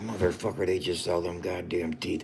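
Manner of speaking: mortified, embarrassed reaction full of swearing. Retelling how an embarrassed man reacted: imitating an embarrassed man. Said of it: "He's like".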